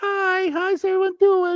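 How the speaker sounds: squeaked out, very high. Quoting a huge guy's greeting to show how he talks: Minnie Mouse voice. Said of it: "when he talks like kind of like Minnie Mouse".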